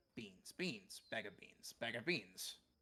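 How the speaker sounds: speaking in a crow voice. Voicing a crow for the players in a tabletop game: crow voice. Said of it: "The crow goes".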